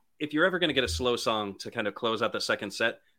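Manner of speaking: ordinary delivery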